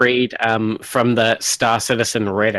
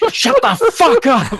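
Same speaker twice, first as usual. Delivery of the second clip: mock shrill shout, very high and loud; 5 dB louder than usual. Retelling how a woman came out at 1 a.m., imitating her loud yell. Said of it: "real loud".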